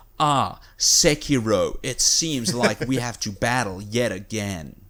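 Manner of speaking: very slow, earnest, try-hard English video game dub delivery. Mocking the English dub of Sekiro, imitating its voice actor. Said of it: "the English voice actor is just trying to sound good".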